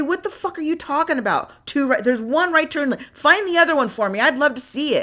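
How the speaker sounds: put-on high screaming. Retelling a quarrel with another driver after an accident: retelling a scream. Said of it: "I screamed at him".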